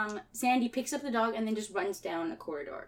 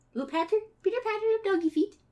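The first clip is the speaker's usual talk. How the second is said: high-pitched pitter-patter rattled off quickly. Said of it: "That's what dogs sound like".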